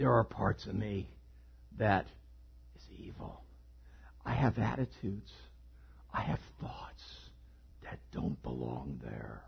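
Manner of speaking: breathy, whispered put-on villain voice. Speaker addressing listeners, trying to do the villain voice. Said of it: "I'm trying to do the villain voice".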